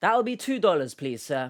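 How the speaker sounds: acted foreign-sounding, non-American accent. Acting a cashier in a US store, put-on non-American accent. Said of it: "why I've got this accent".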